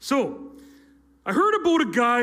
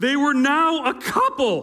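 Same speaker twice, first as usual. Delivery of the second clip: voice rising higher with excited pitch. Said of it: "my voice got pretty high there".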